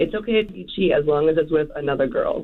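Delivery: plain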